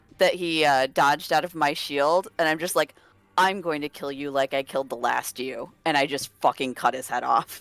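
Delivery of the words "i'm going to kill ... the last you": deadpan menacing character voice, lower and quieter. Playing a character facing a smug enemy, deadpan in-character threat. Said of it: "deadpan look at it".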